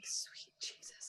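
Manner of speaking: hushed whisper, muttered under the breath. Voicing a character walking past a scene in a hallway: muttered under breath. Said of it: "under her breath was walking by like".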